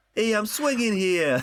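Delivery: put-on New York accent, pitched very high. Playing someone who just swung in from New York City, New York accent Spider-Man. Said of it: "Where's the accent gone?".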